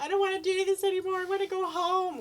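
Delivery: mock weepy sobbing, very high-pitched. Retelling filming oneself on a scary night: retelling own crying. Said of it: "I'm crying".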